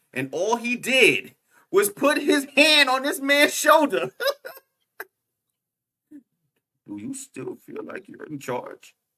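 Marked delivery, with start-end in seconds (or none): 6.9-8.9 soft, quiet, menacing terror. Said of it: "it's the quiet terror".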